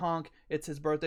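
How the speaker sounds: normal talking voice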